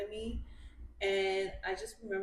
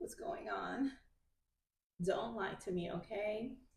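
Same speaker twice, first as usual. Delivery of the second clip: put-on young teenager delivery, like a fourteen-year-old; 4 dB quieter than usual. Retelling own past words to a boyfriend: imitating own fourteen-year-old self. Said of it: "I said it in a very fourteen-year-old way".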